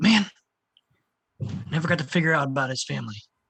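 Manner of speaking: mumbling, as if to oneself. Playing a character whose friend just died, muttering under breath. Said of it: "I'm gonna say under my breath".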